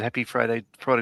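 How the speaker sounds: ordinary talk, nothing marked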